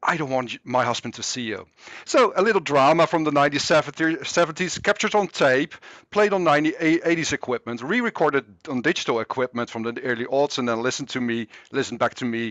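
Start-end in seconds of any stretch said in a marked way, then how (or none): 0.1-1.7 mock whispered speech. Retelling a conversation overheard on an old tape: imitating a whisper. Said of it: "a female voice whispered back".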